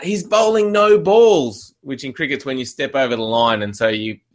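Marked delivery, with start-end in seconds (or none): 0.0-1.7 put-on high, drawn-out shouting. Retelling a guy at a cricket match yelling from the sideline, retelling a yell. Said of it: "This guy starts yelling out".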